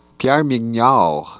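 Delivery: name pronounced with French accent. Presenting a painting by a french artist: french accent on name. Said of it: "whose name I am pronouncing in a French accent".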